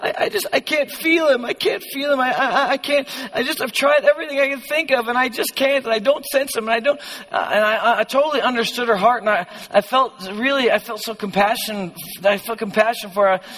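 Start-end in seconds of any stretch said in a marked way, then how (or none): 0.0-7.0 crying, tearful, broken-up, halting pleading. Retelling a girl's plea during worship: imitating a crying girl. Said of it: "she was just in tears, just crying".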